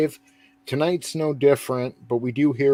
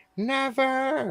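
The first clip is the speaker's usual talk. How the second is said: clumsy, very high-pitched screaming cry; 13 semitones higher, 3 dB quieter than usual. Retelling a wrestling segment, doing a Paul Bearer impression. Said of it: "I wish I could do a better Paul Bearer".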